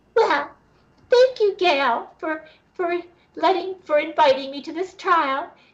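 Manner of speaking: squeaked out in a high voice. Retelling a story about a trial, in a high-pitched Satan voice. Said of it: "Satan's voice is very high pitched".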